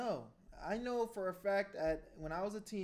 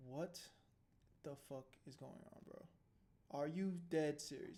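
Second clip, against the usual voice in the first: put-on stunned, incredulous, disappointed dad voice; 4 semitones lower, 7 dB quieter than usual. Voicing a father's reaction while watching a courtroom video: imitating a disappointed father. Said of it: "He's just like".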